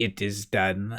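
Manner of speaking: put-on German accent, said softly. Retelling a time-travel story's ending, as Einstein: Einstein's German accent. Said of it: "in his German accent".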